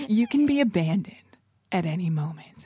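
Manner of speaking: mock-grave, put-on serious delivery. Retelling what the other speaker said on meeting, imitating a serious delivery. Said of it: "it was so serious how you delivered it".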